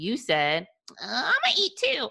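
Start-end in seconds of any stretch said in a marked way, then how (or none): 1.0-2.1 very high, teasing, mocking echoing voice. Retelling what the other speaker texted: imitating the other speaker mockingly. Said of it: "'Cause that's how you sounded".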